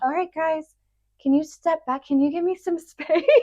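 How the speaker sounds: acted extra-nice sweetness. Retelling how the speaker asks kids in line for space: retelling talking extra nice. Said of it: "talking so nice".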